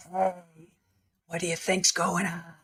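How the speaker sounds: loud, hushed stage whisper. Mocking a woman in court who never learned to whisper, imitating Lori's loud whisper. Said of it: "she whispers like".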